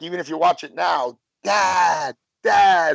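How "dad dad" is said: higher, louder repeated hollering. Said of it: "it sounds like".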